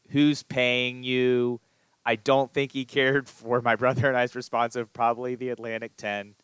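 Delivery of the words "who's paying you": acted-out, screamed, yelled delivery. Recounting a man screaming at officials during a basketball game, retelling a scream. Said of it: "he screamed".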